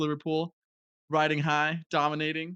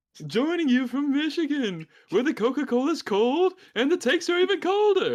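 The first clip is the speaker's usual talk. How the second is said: very high-pitched little elf voice; 10 semitones higher, 4 dB louder than usual. A co-host greets listeners from michigan in a little elf voice. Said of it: "you sound like a Santa Claus movie, a little elf".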